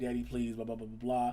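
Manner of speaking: put-on pleading, begging voice. Retelling a daughter pleading with her father to let her out: imitating a daughter pleading. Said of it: "trying to beg and plead".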